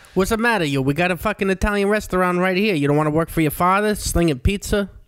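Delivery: put-on Long Island accent. Quoting people reacting to a move to LA for stand-up: Long Island accent. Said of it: "In that Long Island voice".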